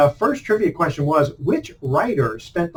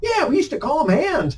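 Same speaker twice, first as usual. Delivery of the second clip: put-on old man accent, pitched very high; 11 semitones higher than usual. Retelling an old man talking baseball with him: imitating an old man's accent. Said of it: "he had that kind of accent".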